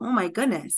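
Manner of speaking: normal talking voice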